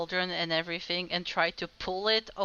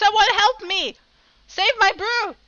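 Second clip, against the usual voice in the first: full-volume, very high-pitched shriek; 11 dB louder than usual. Playing a character trying again to drag a table: screaming in character.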